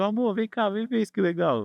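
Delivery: high, calling-out shout. Retelling how an older man called his wife over: imitating someone shouting. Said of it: "ele gritou pra mulher dele assim".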